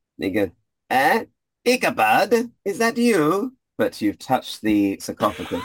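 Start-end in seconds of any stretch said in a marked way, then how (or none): 0.9-3.5 very high, very slow, drawn-out put-on voice. Voicing a familiar figure calling from behind: familiar voice, different accent from Jimmy. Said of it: "you hear from behind you a very familiar voice".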